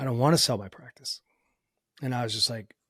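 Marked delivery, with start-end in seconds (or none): 0.0-1.2 put-on voice, choked up and tearful, catching with emotion. Retelling what a doctor said after getting choked up: imitating a choked-up voice. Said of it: "he got choked up and he was just like".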